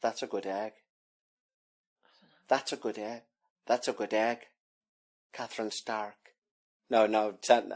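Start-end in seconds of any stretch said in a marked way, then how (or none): 0.0-6.1 quiet, hushed character voice. Taking over after telling the other speaker they've lost it, in a Littlefinger voice. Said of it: "This is Littlefinger from Game of Thrones saying".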